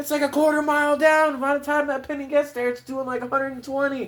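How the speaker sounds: put-on shrill, very high-pitched yelling dad voice. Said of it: "that's why he was yelling".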